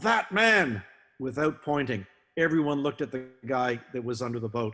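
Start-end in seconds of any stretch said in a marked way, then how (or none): 0.0-0.8 high, loud yell. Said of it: "he yelled".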